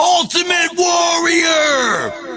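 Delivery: long, high, drawn-out yelling war cry.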